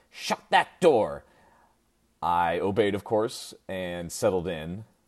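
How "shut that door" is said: piercing, shrill, high-pitched shrieking yell. Retelling mom yelling at a child opening the car door: imitating mom's shrill yell. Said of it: "in the shrillest voice I've ever heard come from her, my mom yelled".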